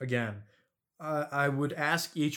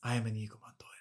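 soft, hushed whisper; 3 semitones lower, 6 dB quieter than usual. Describing a favorite sword fight line, whispering like Inigo Montoya. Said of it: "just whispers".

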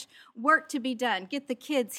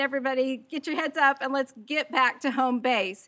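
ordinary talk, nothing marked

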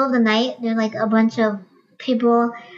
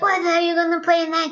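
put-on drunk man's shout, higher; 7 semitones higher than usual. Retelling a plastered guy at a gig: imitating a drunk guy shouting.

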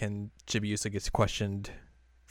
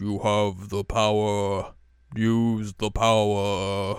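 very slow, raised, looming mysterious voice; 5 dB louder than usual. Retelling a scene, voicing a voice that tells a hero: mysterious voice. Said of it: "hears the mysterious voice like".

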